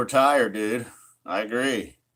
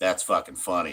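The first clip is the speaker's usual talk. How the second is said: usual speaking voice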